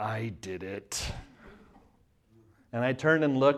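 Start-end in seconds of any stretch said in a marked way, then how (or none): 0.0-1.0 very quiet, low, through clenched teeth. Retelling what he said while the speaker did the dishes, imitating gritted teeth. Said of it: "through gritted teeth".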